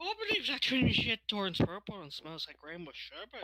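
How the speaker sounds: loud, sing-song Irish accent. Picturing a friend talking in a stereotypical Irish accent. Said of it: "stereotypical, uh, Irish accent".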